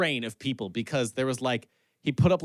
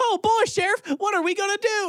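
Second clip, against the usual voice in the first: very high-pitched, goofy, jolly, jovial put-on character voice; 4 dB louder than usual. Describing a movie character in too-short overalls: jovial goofy Chris Pine character voice. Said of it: "And he kinda talks like".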